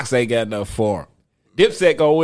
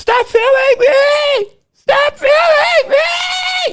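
very high, very slow, shrill drawn-out screaming; 6 dB louder than usual. Retelling a woman's words in a store video: imitating screaming at top of lungs. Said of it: "She's screaming at the top of her lungs".

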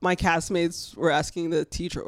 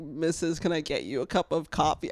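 ordinary talk

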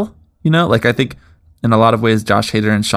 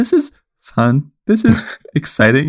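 forced delivery, slow and pitched-up; 6 semitones higher than usual. Co-host imitates how the other host just sounded, like someone in a hostage crisis. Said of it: "You sound like you're in a hostage crisis".

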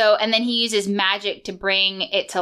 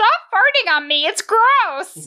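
very high, swooping, animated cartoon voice; 12 semitones higher, 4 dB louder than usual. Doing a different impression from the episode for another speaker. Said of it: "I'm gonna do a different one".

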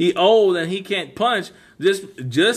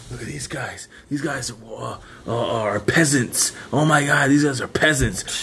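put-on drunk voice, much lower, slower; 7 semitones lower than usual. Retelling a drunk man mocking some guys, imitating drunken speech. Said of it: "He was drunk as fuck".

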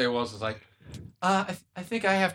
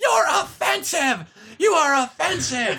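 mock furious, very high-pitched, slow screaming; 12 semitones higher, 6 dB louder than usual. Telling how a lady stood up during a set, retelling her screaming. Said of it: "started screaming".

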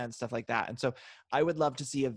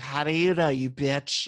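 mock drunken slurring, louder; 6 dB louder than usual. Recalling a reality-show cast member at the bar, imitating Ray's drunk slurring. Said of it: "he was the one who was like slurring in the bar".

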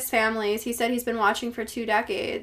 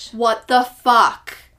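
screaming, much louder; 7 dB louder than usual. Reacting to a weird story about mysterious letters, the speaker is screaming. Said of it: "sorry if I'm screaming".

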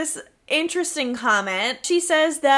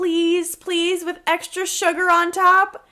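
mock wheedling begging voice, pitched up; 5 semitones higher than usual. Retelling a scene where he begs his girlfriend: imitating someone begging. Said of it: "he's begging her".

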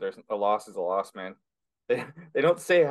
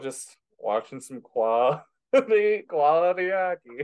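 very slow, high, dragged-out words between giggles; 6 semitones higher than usual. Saying what they have been watching lately, laughing while talking. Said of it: "you can't even say that without laughing".

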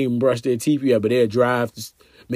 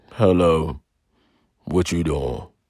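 very deep, slow, just-woke-up voice; 7 semitones lower than usual. Acting out a caller phoning early in the morning: imitating a real deep voice. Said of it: "with the real deep voice".

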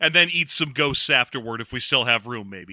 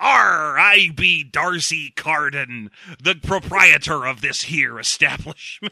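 put-on pirate-like Welsh accent, louder; 4 dB louder than usual. Recounting a movie where a man walks over, in a pirate-ish welsh accent. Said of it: "a man walks over with a pirateish welsh accent".

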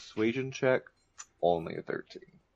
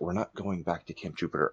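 hushed half-whisper under the breath; 3 dB quieter than usual. A player voices their character's free action during a game, half-whispering. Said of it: "if I could just like whisper".

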